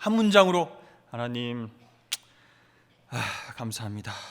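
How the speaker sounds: put-on unwilling sighing. Acting out a child told to pray, mock-sighing, flat prayer. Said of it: "이렇게 막 한숨 쉬면서 이렇게 썰렁하게".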